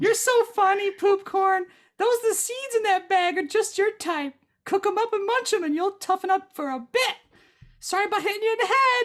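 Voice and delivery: very high, tiny female pixie voice. Narrating a game, a little pixie floats down from the trees to talk to the players: little female pixie voice. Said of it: "A little female pixie floats down from the trees to talk to you. / A little female pixie floats down from the trees to talk to you. / A little female pixie floats down from the trees to talk to you. /".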